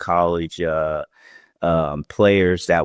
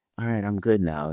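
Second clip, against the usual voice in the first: put-on forced calm after deep breaths, quieter; 2 semitones higher, 7 dB quieter than usual. Retelling how he got loud, then breathed deeply: imitating someone calming down after deep breaths. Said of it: "Then takes a couple deep breaths".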